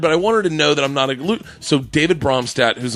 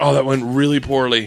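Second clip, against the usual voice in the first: normal talking voice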